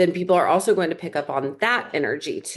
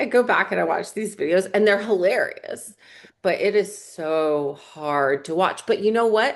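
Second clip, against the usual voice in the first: ordinary delivery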